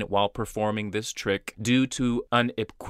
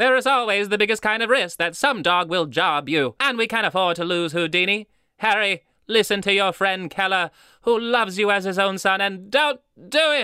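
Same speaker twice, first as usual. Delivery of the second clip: put-on old magician voice, higher and louder; 9 semitones higher, 4 dB louder than usual. Reading a letter from magician Harry Keller aloud: Harry Keller voice. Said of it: "I assume this man would sound like this".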